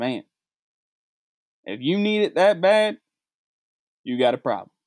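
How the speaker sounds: best-effort put-on Texas accent. Speaker retells what a man said walking past the liquor store, texas accent. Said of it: "in his best Texas accent".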